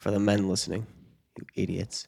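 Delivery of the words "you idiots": hushed, stage-whispered aside. Addressing men listening, whispering. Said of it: "I'm gonna whisper here".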